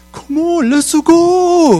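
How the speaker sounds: imitated Korean accent. Retelling golfers behind them urging them on: korean accent. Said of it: "So they had like this Korean accent".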